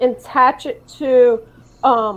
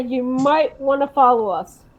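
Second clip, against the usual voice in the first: usual speaking voice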